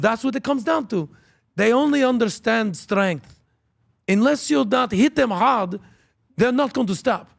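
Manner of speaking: thick put-on Israeli accent. Speaker retells an argument, quoting the Israeli guy, thick Israeli accent. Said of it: "the Israeli guy with the thick accent".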